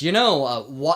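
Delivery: put-on annoyed male voice. Retelling a man's reply after a woman asked pardon, imitating an annoyed man. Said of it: "the curator's, annoyed".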